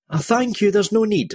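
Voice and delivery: high, gasping voice, catching breath. A freed woman answers her rescuer, arms around his neck, gasping. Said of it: "she gasped".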